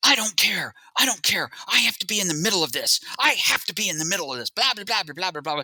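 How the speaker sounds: high, agitated screaming. Retelling a man yelling at his producer over the phone, imitating someone screaming. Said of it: "he's screaming at him".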